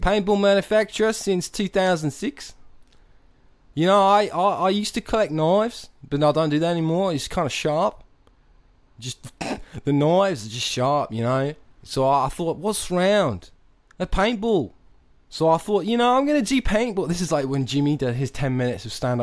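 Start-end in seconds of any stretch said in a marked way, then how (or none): 0.0-17.1 fake, high-pitched put-on Australian accent. Playing a paintball manufacturer named Dingo: put-on Australian accent. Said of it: "I love doing that accent".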